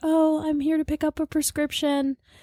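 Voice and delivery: very high, timid, meek, sick princess voice. Retelling asking a pharmacist for a prescription, meek sick voice. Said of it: "Why'd you say it like that?".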